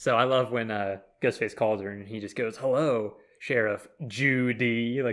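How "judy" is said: strong stress on the word Judy. Retelling the killer's phone call in Scream Four: stress on JUDY. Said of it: "he emphasizes Judy".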